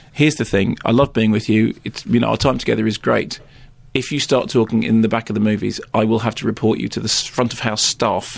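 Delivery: ordinary talk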